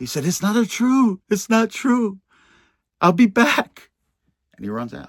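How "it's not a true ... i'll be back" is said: play-acted very high, very loud, tearful crying. Retelling what a man in the cell said after he started crying, imitating him crying. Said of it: "he started crying".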